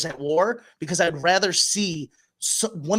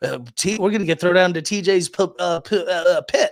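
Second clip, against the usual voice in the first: put-on stuttering cartoon voice, louder; 4 dB louder than usual. Imitating a cast member talking about a pit: stuttering like Porky Pig. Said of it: "Sounded like Porky Pig there".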